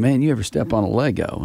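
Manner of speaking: ordinary delivery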